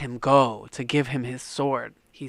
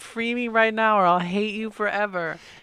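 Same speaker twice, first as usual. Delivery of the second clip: put-on, high, breaking-down ranting voice; 9 semitones higher, 4 dB louder than usual. Retelling a character from a story begging to be let go, acting out ranting and pleading. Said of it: "ranting, pleading".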